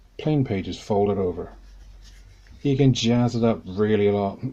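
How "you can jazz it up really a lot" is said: dry, ironic, tongue-in-cheek sarcastic tone. Describing how to decorate a plain notebook: sarcastic. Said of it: "I'm being sarcastic here".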